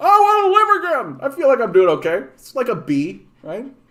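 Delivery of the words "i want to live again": put-on very high classic old-movie hero voice. Asking others what they think of your impression, doing an It's a Wonderful Life impression. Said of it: "my impression of uh, uh what's his name from uh, It's a Wonderful Life?".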